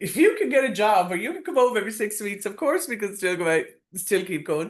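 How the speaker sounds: high, chuckling, laughing while talking. Recounting a man's reply while he laughed at the speaker, imitating someone laughing while talking. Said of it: "he was laughing at me".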